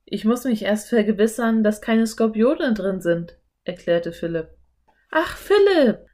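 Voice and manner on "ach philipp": laughing through words, very high and loud. Her companion checks his boots for scorpions; she speaks to him, laughing. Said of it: "Anne lachte".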